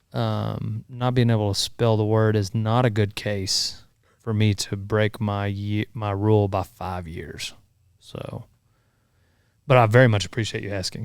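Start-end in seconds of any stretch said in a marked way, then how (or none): 9.6-11.0 dry, sarcastically polite appreciative tone. Turning down a request, then thanking the asker: sarcastic. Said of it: "Sorry, I'm sarcastic".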